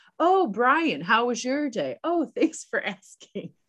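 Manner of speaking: pointedly passive-aggressive. Retelling how a man answered Kelly's warning at dinner, mock passive-aggressive tone. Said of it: "he very passive aggressively is like".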